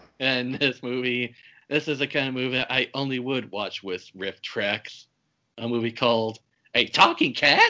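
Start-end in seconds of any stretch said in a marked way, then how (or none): 6.8-7.7 very high, loud, disbelieving incredulous exclamation. Introducing the next movie under discussion: incredulous exclaimed question. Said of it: "I say it in that tone of voice".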